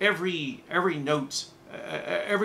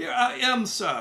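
bad, shaky put-on German accent, pitched higher; 8 semitones higher than usual. Discussing an episode, a viewer quotes a character's reply: Fräulein Müller, bad German accent. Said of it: "That's not a good German accent".

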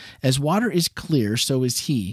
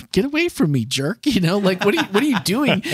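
put-on harsh sarcastic snap, much higher; 8 semitones higher, 3 dB louder than usual. Recalling a TV episode, quoting the woman at the well, mock harsh and sarcastic. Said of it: "she is so harsh and sarcastic".

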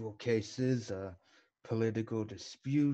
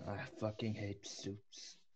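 hushed whisper, very quiet, barely audible; 2 semitones lower, 11 dB quieter than usual. Speaking in character, leaning over to another character: whispering. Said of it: "I whisper to Harrison".

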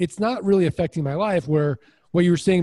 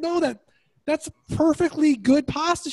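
mock very high-pitched yelling; 10 semitones higher than usual. Retelling an argument with his wife over leftovers: imitating himself yelling. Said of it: "I yell at my wife".

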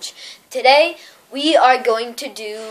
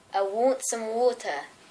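put-on British accent, quieter; 10 dB quieter than usual. In an accent-guessing game, saying a phrase for the other player, british accent.

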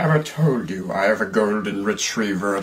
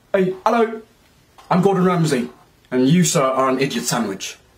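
passionate, scolding, pitched-up celebrity chef voice; 7 semitones higher, 4 dB louder than usual. Taking turns doing celebrity impressions, doing a passionate Gordon Ramsay impression. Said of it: "you have to talk like you have full of passion".

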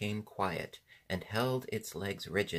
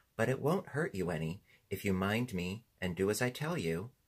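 plain reading voice

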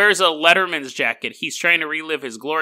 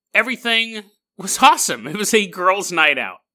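usual speaking voice

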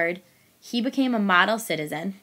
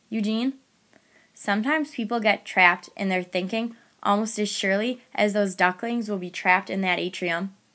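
ordinary delivery

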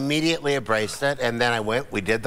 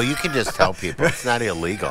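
usual speaking voice

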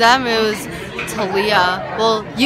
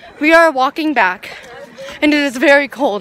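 winded, breathless, out-of-breath speech; 4 semitones higher than usual. Walking back fast in the cold, the speaker narrates to the camera: out of breath. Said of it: "I'm out of breath because we are walking fast".

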